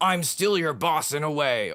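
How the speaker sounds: put-on American accent. Retelling a goodbye talk with an ex-boss as a server ended, in the boss's american accent. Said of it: "however he says it in his American accent".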